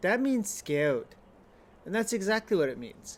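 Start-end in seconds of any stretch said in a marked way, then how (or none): 0.0-1.1 put-on sweet, cute little toddler voice. Retelling what a toddler daughter said back: imitating a cute toddler voice. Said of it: "in her cute little, uh, toddler voice".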